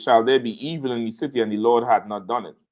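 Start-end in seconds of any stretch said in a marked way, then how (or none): none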